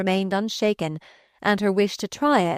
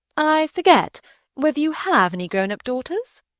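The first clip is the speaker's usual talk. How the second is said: innocent, doubtful tone, pitched up; 7 semitones higher than usual. A lady asks her conversation partner whether he has grown-up daughters; innocent air of doubt. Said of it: "with an innocent air of doubt".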